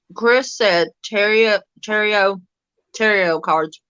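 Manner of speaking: words blurred by food, muffled, talking while chewing. Relaying what chris said about cards, the speaker is talking with mouth full. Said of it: "Sorry, I got mouthful".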